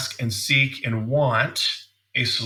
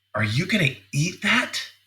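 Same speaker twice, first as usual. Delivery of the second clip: mock pointed, disapproving, judgmental insinuation; 4 semitones higher than usual. Acting out a woman's question in a changed tone, mimicking a judgmental tone. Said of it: "she changes the tone of voice".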